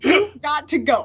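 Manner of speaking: high, slow, drawn-out priest voice.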